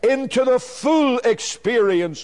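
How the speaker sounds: the word full heavily stressed. Preaching about God leading us step by step: strong emphasis on full. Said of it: "let me emphasize the word again".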